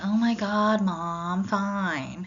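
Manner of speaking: put-on very slow slouchy teenager drawl. Teaching nonverbal communication, contrasting with a confident professional: slouchy teenager voice. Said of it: "portray yourself as a slouchy teenager saying".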